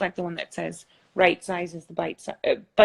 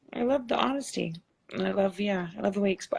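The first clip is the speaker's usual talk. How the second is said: tearful voice breaking, crying through words; 3 dB quieter than usual. Speaker moved by the other person's honesty, crying while talking. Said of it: "I'm really crying".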